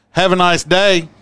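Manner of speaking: rowdy, boisterous, shrill, high, booming, very loud voice. Retelling how a man snatched the paper from them: imitating his boisterous voice. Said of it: "Look at him in a boisterous voice".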